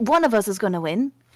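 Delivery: whispered aside. Speaking in character, turning to the rest of the party: whispering to the party.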